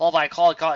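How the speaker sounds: ordinary delivery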